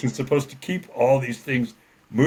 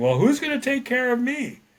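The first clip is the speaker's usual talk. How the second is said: put-on very high, shrill, rising, demanding yell; 12 semitones higher than usual. Retelling another guy yelling from the back, imitating a man yelling. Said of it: "this other guy is yelling".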